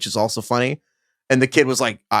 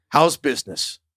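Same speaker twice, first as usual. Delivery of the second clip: put-on deep New Orleans drawl; 2 semitones higher than usual. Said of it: "this deep New Orleans drawl".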